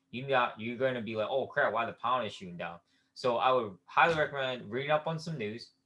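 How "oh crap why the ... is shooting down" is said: plain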